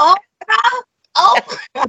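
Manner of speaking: put-on very high-pitched, heavy, strong Southern accent, called out. Recalling a southern woman who called her oprah, imitating her: deep southern accent. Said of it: "She has such a deep Southern accent".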